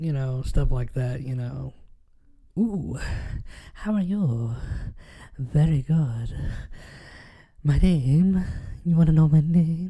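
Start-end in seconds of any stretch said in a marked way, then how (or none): 2.6-9.9 eerie, sinister, spooky put-on character voice. Showing off the voices they can do, in a creepy voice. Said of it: "I got like creepy voices".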